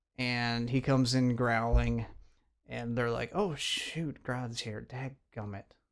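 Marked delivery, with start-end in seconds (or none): 3.4-5.6 soft, mild put-on disappointment. Retelling heroes reacting to a giant gorilla's arrival, mock mild disappointment. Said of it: "You made it more sound like they just lost the game".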